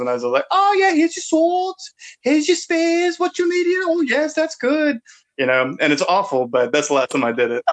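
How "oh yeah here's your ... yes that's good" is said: very high, put-on British shopkeeper accent. Acting out a seller's lines, in a high-pitched put-on British accent. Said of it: "you do your high pitched British voice".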